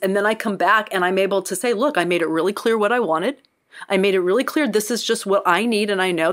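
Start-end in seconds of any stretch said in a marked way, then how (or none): none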